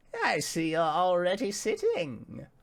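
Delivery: put-on high, crackly old woman voice like crunching leaves. Narrator voicing a character greeting two seated players, voice like crunching leaves. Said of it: "she says in a voice reminiscent of crunching leaves".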